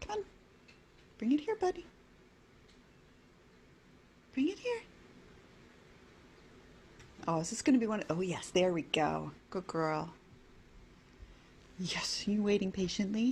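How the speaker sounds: coaxing, encouraging, sing-song pet voice. Coaxing a kitten to bring back a toy: encouraging voice for a cat. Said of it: "an encouraging cat voice".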